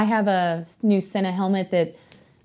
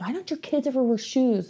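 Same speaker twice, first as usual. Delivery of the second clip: mild, high-pitched put-on yell; 6 semitones higher than usual. Retelling how someone reacts to the kids at home, imitating someone yelling. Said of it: "screams and yells".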